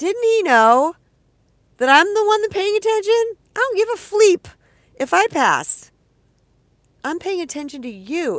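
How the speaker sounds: very loud, shrill, high-pitched joking sarcasm. Telling about a boyfriend saying she passed the kiss test: joking and sarcastic. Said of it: "I'm saying this joking and sarcastic and kind of comedic".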